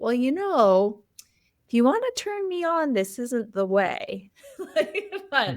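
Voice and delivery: tender, very gentle, soft delivery. Retelling how Gerald answered her complaining, mock-gentle Gerald impression. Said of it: "Gerald just like very gently".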